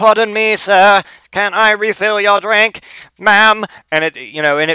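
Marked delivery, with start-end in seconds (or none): 0.0-3.6 flat, raised-pitch, monotone mechanical robot butler voice. Imagining the neighbours' robot butler offering drinks: robot butler voice. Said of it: "a robot butler that just comes up and is like".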